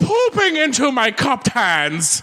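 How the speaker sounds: deliberately awful Irish accent, very high and drawn out. Performing a line on request in a bad irish accent. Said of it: "That's the best bad Irish I can get".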